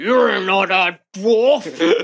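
very drawn-out, slow, brutish orc grumble. Voicing an orc who steps up behind a player: orc grumbling. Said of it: "and you hear him grumble".

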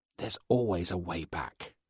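urgent stage whisper, loud and pushed hard. Reading a mother speaking to her daughter across the table, in a loud whisper. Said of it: "in a loud whisper".

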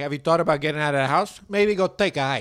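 loud wise-guy mafia-guy delivery. Imagining a super Italian life coach: imitating Vincenzo Venuto as a mafia guy. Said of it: "He's like".

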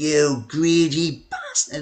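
high-pitched, swooping, angry shouting outburst. Retelling how a chairman reacted on the phone: imitating someone shouting angrily. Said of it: "like this, and he started shouting down the phone".

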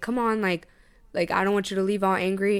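usual speaking voice

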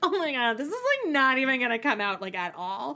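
put-on laughing to oneself. Retelling a TV scene with a magic eraser: imitating someone laughing to herself. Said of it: "she's kind of laughing to herself".

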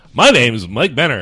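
loud, on-air radio host announcer voice. Introducing himself at the show's start, stepping in with his radio voice. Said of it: "I'm stepping in with my radio voice".

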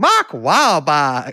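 put-on Carolina accent on the name. Discussing regional accents, giving an example of a carolina accent. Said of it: "an extraordinary example of a Carolina accent".

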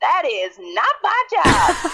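loud, very slow, stretched-out, swooping delivery. Recalling the Drake and Josh cinema woman, imitating Helen. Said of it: "she goes".

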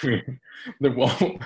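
loud, high laughter.

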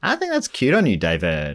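spot-on sitcom character voice, sing-song, swooping pitch. Trying another line after being asked about the impression: Schitt's Creek character impression. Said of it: "Normally, I'd nail those impressions".

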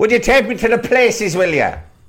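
not-quite Belfast accent, very high pitched. Talking about Belfast taxi tours, voicing someone asking for one: attempted Belfast accent. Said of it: "that wasn't really a Belfast accent".

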